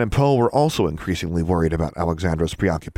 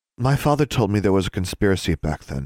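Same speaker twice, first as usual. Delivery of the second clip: ordinary delivery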